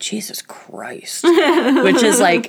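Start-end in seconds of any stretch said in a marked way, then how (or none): 0.0-1.2 mock whisper under breath, lower and quieter. Speaker retelling a little girl's reaction to her mom, retelling a whisper under breath. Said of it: "the little girl whispered under her breath".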